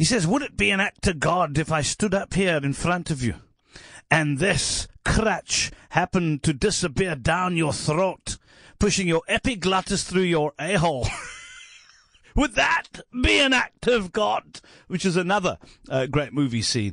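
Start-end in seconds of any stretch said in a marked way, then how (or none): 0.3-14.4 put-on Scottish comedian voice, higher. Retelling a movie scene at an insurance company: not very good Billy Connolly voice. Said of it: "I don't do a very good Billy Connolly voice".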